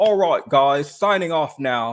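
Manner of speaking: put-on, assumed British accent. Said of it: "thank goodness I don't have to do that voice anymore".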